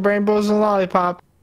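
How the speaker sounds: ordinary delivery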